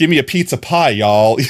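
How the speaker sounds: put-on New York accent mixed with a Southern tinge. Speaker imitates a woman raised in the South who lived in the North; southern New Yorker accent. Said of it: "a southern New Yorker accent".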